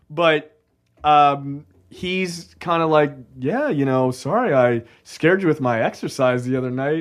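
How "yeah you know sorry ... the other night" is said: put-on old-timey nineteen-fifties old man voice.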